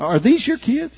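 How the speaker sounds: irritated, sharp, high-pitched voice.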